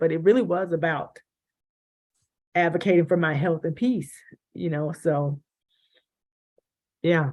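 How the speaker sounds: tearful, teary, emotional voice. A speaker recalls advocating for her health and peace, tearing up. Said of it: "I'm tearing up".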